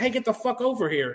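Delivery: put-on hard scream. Retelling an order shouted during an ambush: imitating someone screaming. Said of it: "Alet's screaming at me".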